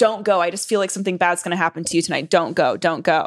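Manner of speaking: mock begging, pleading tone. Retelling how a mother pleaded before a night out: imitating a mother begging. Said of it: "my mom's, like, begging".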